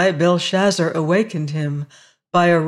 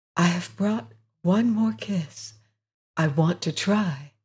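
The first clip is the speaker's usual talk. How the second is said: close, intimate, soft, hushed stage whisper; 6 dB quieter than usual. Reading a woman's words to the harvester as she leans in to kiss him, half-whispering. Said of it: "she whispered".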